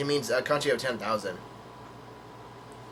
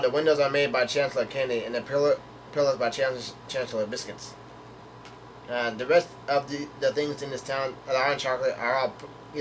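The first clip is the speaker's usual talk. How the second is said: ordinary delivery, nothing marked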